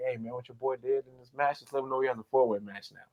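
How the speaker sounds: barely audible, very quiet half-whispered aside. Retelling what Nick Aldis told Paul Heyman: imitating Nick Aldis half-whispering. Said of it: "he just whispers to Paul Heyman, like".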